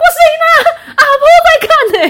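blurted, sudden yell, very high and loud. Retelling a moment of shouting during a friend's stage show: retelling own shout. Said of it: "我不小心大喊说".

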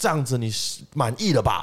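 mock odd, unfamiliar, high-pitched half-shout. Retelling what a man shouted after getting back up; retelling a shout. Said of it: "就是大喊就说".

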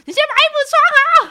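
put-on very loud, shrill, furious yell. Recounting a moment before going to the hospital, re-enacting being angry. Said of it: "然后我就很生气".

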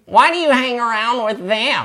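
very high, nerdy character voice. Reading a picture book aloud, the reader gives an unknown character a nerdy voice. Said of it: "nerdy voice".

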